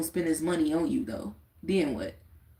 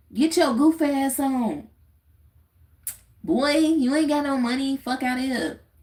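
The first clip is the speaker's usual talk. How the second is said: high-pitched Chicago street talk, scolding tone; 8 semitones higher than usual. A Chicago native showing listeners how people there talk, imitating how Chicagoans talk. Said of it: "This is exactly how they be talking".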